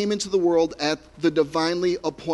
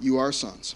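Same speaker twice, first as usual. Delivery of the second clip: heavy emphasis on the word "are"; 5 semitones lower, 5 dB quieter than usual. Preaching on Paul's words in verse 6, stress on the word 'are'. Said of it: "I'm putting the emphasis here on the word "are."".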